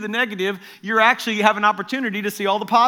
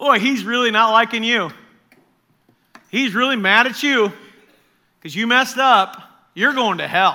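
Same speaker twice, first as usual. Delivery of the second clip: heavy, mocking, sarcastic delivery; 4 dB louder than usual. Preaching about god's double portion, then joking the opposite: sarcastic. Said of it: "That's sarcasm".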